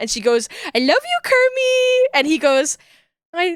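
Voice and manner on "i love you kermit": woozy, very high-pitched voice. Retelling a Muppet movie scene where Miss Piggy is on morphine, imitating drugged Miss Piggy. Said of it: "she's like pumped full of like morphine".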